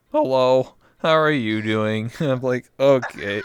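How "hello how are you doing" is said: robotic, synthetic text-to-speech voice. Joking about becoming a robot, the speaker tries out Microsoft Sam voice. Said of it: "I'll have Microsoft Microsoft Sam as my voice".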